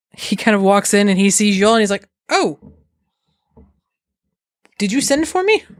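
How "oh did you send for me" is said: bewildered, taken-aback, confused tone, pitched up. Voicing Marcus, called unexpectedly to a household: extremely confused, in character. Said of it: "Marcus is extremely confused".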